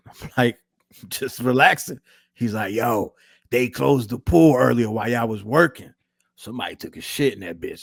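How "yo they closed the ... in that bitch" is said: rough, gravelly, worn, raspy voice. Retelling what a man said to the speaker in the pool, in a raspy voice. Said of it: "He got a raspy voice because he he smokes a lot, so he talks like this".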